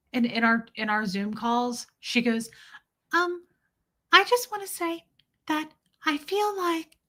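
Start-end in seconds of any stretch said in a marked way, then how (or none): 3.1-6.8 very high, fairy-tale princess tone.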